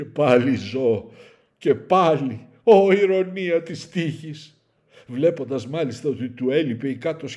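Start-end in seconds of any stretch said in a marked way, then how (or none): 0.0-4.6 loud drawn-out groan. The hero speaks after coming to, groaning. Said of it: "βόγγιξε".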